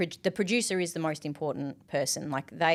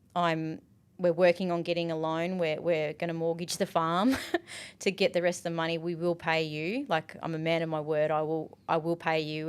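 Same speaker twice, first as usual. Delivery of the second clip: plain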